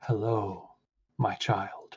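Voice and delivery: gentle, soft, warm, otherworldly ethereal tone. Voicing a god who greets a kneeling player: soft ethereal warming voice. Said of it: "almost sounds ethereal or astral or phantasmal, but very soft, very warming".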